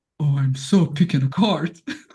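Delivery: low, slow put-on British accent. Speaker imagines what a man with an accent would say, in a British accent. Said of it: "did he had an accent".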